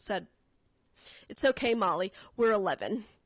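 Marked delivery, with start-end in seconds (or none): 1.3-3.0 put-on calm, mature, confident assurance. Retelling how a girl reassured Molly, imitating calm conviction. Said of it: "with a conviction like so beyond her years".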